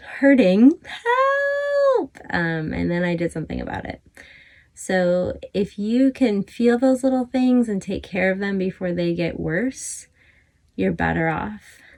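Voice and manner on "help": very high, thin screaming cry. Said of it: "it started screaming at me".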